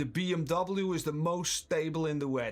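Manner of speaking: sure, firm, determined, no-doubt delivery. Showing a viewer how to state a chat claim: determined. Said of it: "determined to say this".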